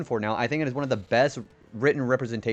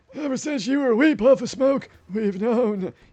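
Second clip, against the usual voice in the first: very high-pitched voice of an ancient dragon elder; 12 semitones higher, 4 dB louder than usual. Remembering a PlayStation game, the speaker does an old Spyro dragon voice. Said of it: "I sound like a dra uh, one of the old dragons from Spyro".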